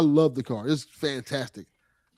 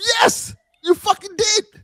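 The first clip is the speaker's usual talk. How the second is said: mock livid snap, very high-pitched, shrill and raised; 7 dB louder than usual. Retelling when someone locked the keys in the car, replaying a livid retort. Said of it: "Now I'm livid".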